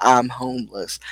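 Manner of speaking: usual speaking voice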